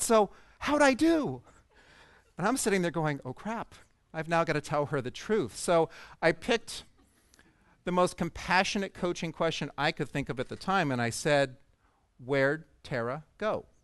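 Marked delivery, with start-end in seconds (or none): 0.0-1.4 sunny, upbeat, cheery tone, very slow and drawn out. Retelling what Tara asked after it went badly, imitating Tara's bright, cheery voice. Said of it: "she said in this bright, cheery voice".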